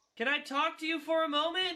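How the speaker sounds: loud high-pitched shouting. Repeating a question after the other character fails to hear it, shouting. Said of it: "Don't you shout at me!".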